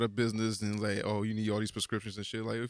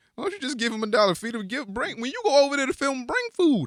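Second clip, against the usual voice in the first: high, loud mock yelling. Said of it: "It was like".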